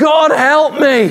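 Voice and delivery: very high, terrified screaming. Storyteller acts out a man as an animal leaps at him, acting out a scream. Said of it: "the man screams out".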